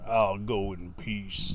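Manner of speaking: very slow, drawn-out big-guy Texas drawl. Describing stereotypical game characters, quoting the big guy: imitating the big guy's texas accent. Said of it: "the big guy who talks like this".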